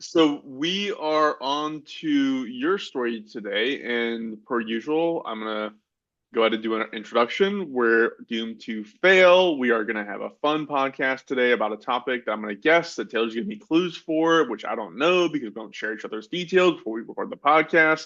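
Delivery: put-on podcast intro announcer voice. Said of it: "I'll stop talking like that".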